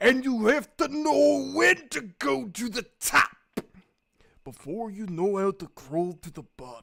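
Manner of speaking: wrestling promo voice, every syllable stressed. Showing how he sometimes talks: Macho Man Randy Savage slow deliberate syllables. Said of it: "Sometimes he talks with really slow, deliberate syllables".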